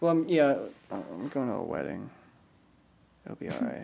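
sounding disappointed. Explaining that the trip is for a wedding, sounding disappointed. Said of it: "Don't sound so disappointed".

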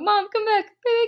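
mock pleading, acted begging tone.

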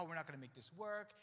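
normal talking voice

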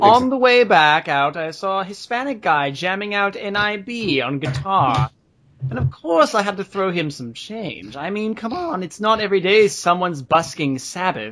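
put-on mid-Atlantic accent like an old announcer. Speaker narrating a story about the morning, in a mid-Atlantic accent. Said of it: "I'm getting a mid-Atlantic accent here".

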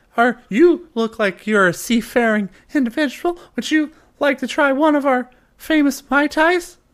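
jittery, very high-pitched voice. A tavern host greets a towering sea elf, nervous tavern host. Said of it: "clearly even more nervous now".

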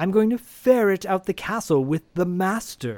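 fancy mocking high voice. Retelling how Paul answered Jeff, mocking fancy Alan impression. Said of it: "very fancy".

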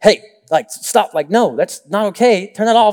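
put-on harsh, stern scolding tone. Retelling scolding the kids over the tv: imitating his own harsh tone. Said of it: "just getting, like, harsh".

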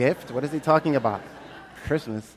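ordinary talk

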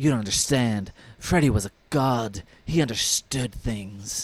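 put-on lofty high school goth teen voice. Recapping a scene where she defends Freddy, doing an impression of her. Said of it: "that was a good impression".

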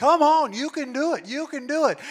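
shrill, high, loud screamed cheering. Describing him as your number one coach, imitating a cheering scream. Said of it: "He's screaming".

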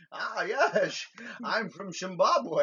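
loud, very slow Scottish accent. Imagining a movie line with the roles switched: Sean Connery voice. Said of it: "just to hear Sean Connery say".

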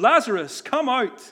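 loud, booming, high-pitched call. Retelling the story of Jesus at the entrance of the tomb, retelling a loud call. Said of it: "he calls out in a loud voice".

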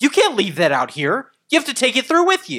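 mock angry, shrill, very high scolding yell. Recounting how a woman yelled at the speaker, retelling her yelling. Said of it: "she's like yelling at me".

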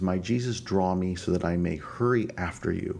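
normal talking voice

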